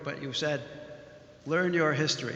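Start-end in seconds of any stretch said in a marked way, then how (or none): none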